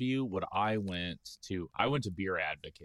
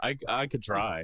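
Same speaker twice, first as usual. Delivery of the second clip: normal talking voice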